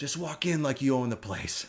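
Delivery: hushed half-whisper, stage-whisper style. Retelling what a man half-whispered to the speaker as they walked in, half-whispered. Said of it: "He whispers to me".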